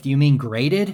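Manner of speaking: play-acted blunt, challenging, aggressive tone. Retelling what the dealer asked back: imitating an aggressive question.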